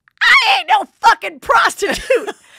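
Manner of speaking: very loud, very high, drawn-out outraged screech. Retelling a video of a grandma and her granddaughter: imitating someone screaming. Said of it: "she's just screaming at her".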